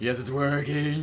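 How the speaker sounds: high voice, slight gravel. Explaining how the Breadman voice is done: slightly gravelly Breadman voice. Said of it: "there's a little gravel in there".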